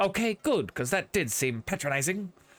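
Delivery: put-on odd, clipped, mid-Atlantic accent. Repeating his own remark to show it off, in a clipped transatlantic accent. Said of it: "I'm talking in a really weird clipped form of the transatlantic accent".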